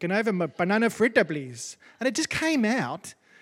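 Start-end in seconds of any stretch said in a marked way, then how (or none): 0.0-1.8 put-on speaking English in an Indian accent. Retelling how she ordered dessert from a waiter in Bangladesh, in an Indian accent. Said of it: "I asked for it in an Indian accent".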